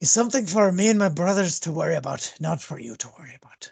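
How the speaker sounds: dismissive words spoken through a heavy sigh. Voicing Gundren answering the players with a big sigh: speaking with a big sigh as Gundren. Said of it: "he kinda just gives a big sigh".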